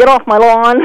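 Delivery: ordinary talk, nothing marked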